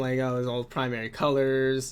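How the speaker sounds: ordinary delivery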